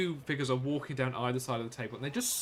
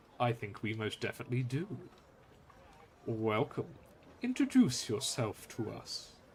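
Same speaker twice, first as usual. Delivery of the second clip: deep, resonant, sonorous voice of a large being; 2 semitones lower, 3 dB quieter than usual. Voicing a larger being greeting a visitor, in a deep sonorous voice. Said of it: "a much deeper, sonorous voice goes".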